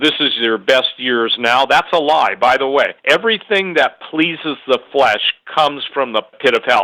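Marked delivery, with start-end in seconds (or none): none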